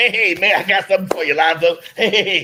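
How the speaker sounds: put-on jovial tone. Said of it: "he gets real uh jovial".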